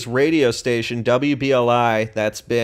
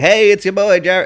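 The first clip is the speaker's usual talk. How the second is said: loud, high, nasally radio-host voice; 8 semitones higher, 6 dB louder than usual. Trying out an intro for a hoped-for radio show, in a nasal voice. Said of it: "Maybe I'll do it all nasally".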